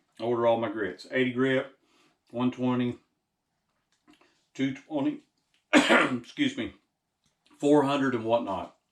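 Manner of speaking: talking while chewing food. Speaker explaining where they order sandpaper during lunch, talking while eating beef jerky. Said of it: "eating my beef jerky".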